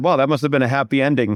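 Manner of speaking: ordinary delivery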